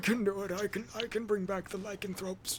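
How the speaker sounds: croaky, dried-out, parched voice. Voicing a character asked for help by the party: dried-out character voice. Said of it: "why are you sounding all dried out".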